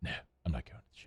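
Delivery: very low, breath-heavy exhaled whisper. Imitating how the other person talks: very low, exhaled voice. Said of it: "you bring your voice very low, and you exhale".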